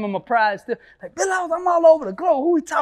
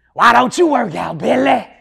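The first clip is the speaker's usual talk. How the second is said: put-on scratchy, raspy voice; 7 dB louder than usual. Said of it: "He got this little scratchy voice".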